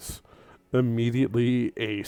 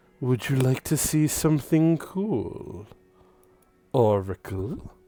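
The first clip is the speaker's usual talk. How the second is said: very soft whispering voice; 2 semitones higher than usual. The narrator voices something whispering to Oracle: very soft whisper. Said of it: "whisper in a very soft voice".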